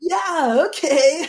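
Southern California bro voice. Recounting a man whose voice they try not to laugh at: imitating Vin Le Pham's bro voice. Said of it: "such a bro Southern California voice".

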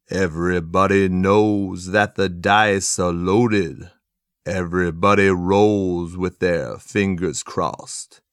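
low pitch, very slow, deliberate delivery. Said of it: "can I do my [name] impression".

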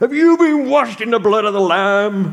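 pushy, aggressive, very high put-on American accent. Retelling how a man with a tract approached them, in a mock-aggressive american accent. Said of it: "Almost with an American accent. And sorry about that".

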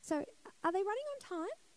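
time said with a rising, question-like upward lilt. Retelling asking the desk a question: rising questioning tone. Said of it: "Like the question mark in your voice".

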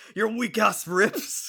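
put-on angry, taunting, very slow and drawn out. Quoting a character who is angry at another: imitating a pissed-off Bakugo. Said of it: "Bakugo's all pissed at Tokiyomi".

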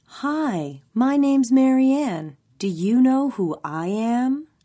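put-on high, slow baby-talk voice. Reading a story aloud, a character mocks a woman who addressed her like a child: mimicking Ava's child-talk delivery. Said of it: "mirrored Ava's delivery".

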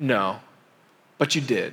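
low, smirking visitor voice.

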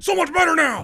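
high, loud yell. Showing how the hug line would sound if yelled: imitating a yell. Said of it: "I don't wanna yell in there".

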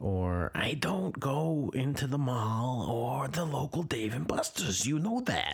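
sudden slip into a New Jersey accent. Talking about not going to the local dave and buster's: slipped into new jersey accent. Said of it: "I don't know why I slipped into a New Jersey accent there".

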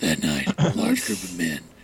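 dark, breathy, hushed near-whisper. Showing how to read a history line: Batman voice. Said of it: "The Batman voice".

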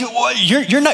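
high, disbelieving, incredulous scolding tone.

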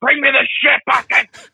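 put-on very high, shrill, high-pitched scream. Retelling a man yelling at his mom or girlfriend, retelling a scream. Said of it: "he's sitting there screaming at like his mom".

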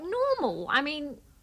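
high, incredulous tone. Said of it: "And I'm like".

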